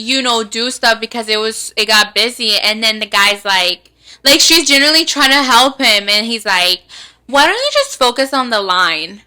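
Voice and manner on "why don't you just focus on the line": acted-out snippy, rude, swooping attitude. Quoting a guy snapping at her in front of everybody: imitating a rude attitude. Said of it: "like with an attitude in front of everybody".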